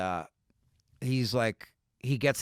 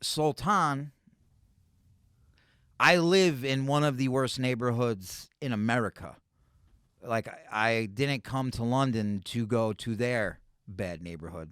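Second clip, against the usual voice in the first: ordinary talk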